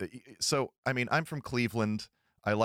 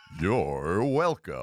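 cranked-up, swooping announcer voice; 3 semitones lower than usual. Repeating a line when asked to do that again: announcer voice turned up. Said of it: "do that again".

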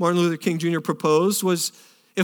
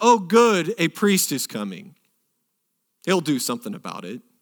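falsely hopeful, plainly insincere, sarcastic sing-song delivery. Retelling a scripture story, the speaker voices a line from it: mock-sarcastic retelling. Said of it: "almost really sarcastically".

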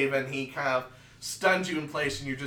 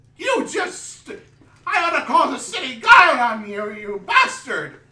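put-on angry old man voice, very high, very loud, shrill; 11 semitones higher, 11 dB louder than usual. The game master voices the shopkeeper noticing his ring is gone; old shopkeeper character voice. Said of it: "The old man behind the counter says, / The old man behind the counter says, / The old man behind the counter says, / we sell all sorts of magic items of all sorts of types".

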